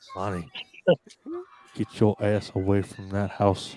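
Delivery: slow, halting, low, swooping voice with deliberate pauses. After a friend praises his imitation, [name] repeats the quote: impression with his pauses. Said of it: "you do the pauses in his voice perfectly".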